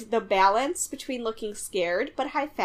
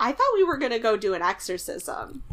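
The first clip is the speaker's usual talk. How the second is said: normal talking voice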